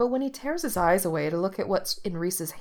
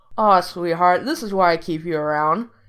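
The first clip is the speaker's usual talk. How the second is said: indistinct, mumbling with mouth full of food; 9 dB louder than usual. Eating a slice someone pushed over to him, talking with mouth full. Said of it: "he says indistinctly around a mouthful of buttery crust".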